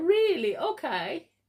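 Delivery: put-on bashful, polite voice. Retelling one's own answer to the lady, imitating own shy reply. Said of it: "So I also shyly say to her".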